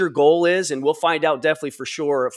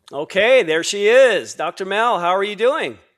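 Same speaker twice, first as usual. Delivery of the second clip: raised, loud, high-pitched yelling; 5 semitones higher, 4 dB louder than usual. Greeting someone who just joined and looks far away: yelling. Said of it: "I think I'm yelling".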